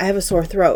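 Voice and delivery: ordinary talk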